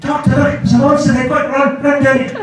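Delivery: very high voice, about two octaves up. An actor describes recording Big Finish audio dramas, voice jumps up two octaves. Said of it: "my voice sort of goes up two octaves".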